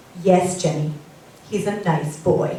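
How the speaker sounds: put-on beautiful English accent. Retelling what a woman would always say about a boy, in an english accent. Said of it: "in her beautiful English accent".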